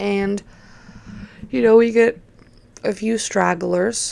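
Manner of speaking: words pushed out halting, mid-yawn. Describing the quiet weekend at the bar, kind of yawning. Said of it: "kind of yawning".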